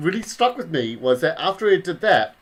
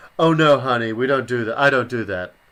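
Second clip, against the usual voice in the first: haughty, condescending, dismissive tone; 5 semitones lower than usual. Retelling what Kathleen Turner said to a fan: condescending Kathleen Turner imitation. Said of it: "so condescendingly".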